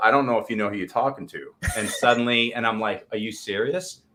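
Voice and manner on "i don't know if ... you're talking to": usual speaking voice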